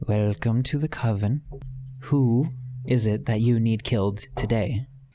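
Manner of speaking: hushed, secretive, concealing half-whisper. A man leans forward to speak, trying to conceal himself, in a hushed half-whisper. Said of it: "He speaks in a hushed whisper".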